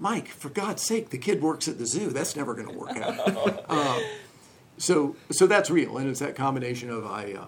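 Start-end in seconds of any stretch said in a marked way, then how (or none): 0.0-4.0 theatrical stage whisper, hushed but carrying. Speaker recalls a father-in-law's friend doubting the speaker's zoo job, in a stage whisper. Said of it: "in a stage whisper".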